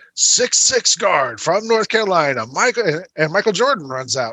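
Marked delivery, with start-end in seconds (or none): 0.2-2.9 arena announcer voice, pitched higher. Retelling an arena introduction, imitating the Bulls PA announcer. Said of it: "the P A announcer for the Bulls".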